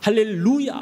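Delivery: 할렐루야 with the stress on 루. Explaining repeating 할렐루야 to get tongues started, stress on third syllable 루. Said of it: "루에다가 이제 악센트를 줘가지고".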